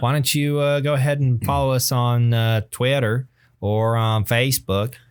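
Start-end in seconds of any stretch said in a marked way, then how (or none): 2.7-4.9 put-on Southern accent. Asking listeners to follow on social media: put-on southern accent. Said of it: "just for those specific words, I adopt a Southern accent".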